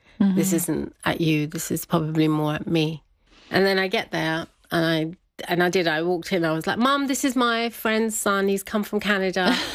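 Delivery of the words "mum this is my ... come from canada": bright, cheery, happy and chirpy voice. Speaker retelling introducing a friend's son to their mum, retelling a happy chirpy greeting. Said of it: "All very happy and chirpy".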